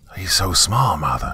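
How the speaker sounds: sibilant, hissing delivery. The female of the litter hisses to their mother about the newcomer. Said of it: "hissed the one to my right".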